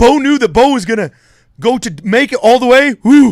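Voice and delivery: high, loud, out-of-breath athlete voice. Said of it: "interview an athlete that just scored a touchdown and he's out of breath".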